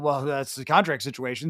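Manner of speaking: dismissive, offhand, brushing-aside tone. Showing how a remark about his contract can sound dismissive. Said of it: "it almost sounds dismissive".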